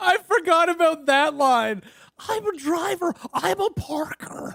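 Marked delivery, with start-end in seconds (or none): 2.3-4.5 baseball announcer voice. Redoing a character line based on an impression of Harry Carey: Harry Carey voice. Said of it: "based on Will Ferrell's imitation of Harry Carey".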